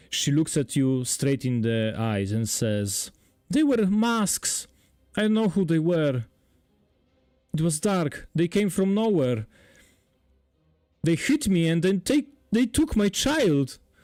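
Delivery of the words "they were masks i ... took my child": crying, higher. Voicing a peasant woman describing an attack to the players: weeping. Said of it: "she weeps".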